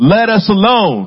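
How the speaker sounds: acted, very high, rude heckling yell. Retelling how a man yelled at the team, as rude as he could be, imitating a yell. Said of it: "He yells it".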